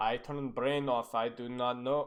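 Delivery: deep, very low, put-on Eastern European accent. Reviewing a player's gameplay, speaking in a put-on eastern european accent. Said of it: "I don't know why I'm talking in an Eastern European accent".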